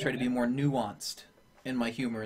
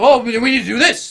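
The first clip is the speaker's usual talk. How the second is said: very loud, very high shout; 12 semitones higher, 17 dB louder than usual. A usually quiet streamer showing how they talk on stream: louder voice. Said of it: "like in a louder voice".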